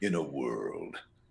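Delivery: very deep, low movie-trailer announcer voice. Answering a request to do the movie trailer guy voice: movie trailer voice. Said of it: "Can you do the trailer mu-, guy mu-, uh, sound, uh, voice".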